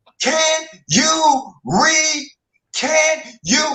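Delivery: woman's high-pitched, in-your-face yelling. Speaker retelling a woman who was yelling at him: imitating a woman yelling. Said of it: "she is yelling".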